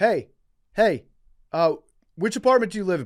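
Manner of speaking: shrill, very loud, high-pitched hollering yell. Retelling a guy yelling a question at the speaker: imitating someone yelling really loud. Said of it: "But he's yelling it, like, really loud".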